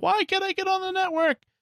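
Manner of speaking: high, squeaky, exasperated, fed-up voice.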